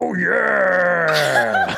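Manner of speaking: very high, raspy, rough, drawn-out screaming. Dubbing audio over another speaker's silent scream: screaming voice. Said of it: "dub in a screaming voice".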